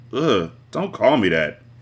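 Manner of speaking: ordinary talk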